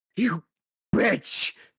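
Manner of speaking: loud, high screamed voice. Voicing a guard hit in the face by fire: guard screaming. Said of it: "you hear this guard scream out".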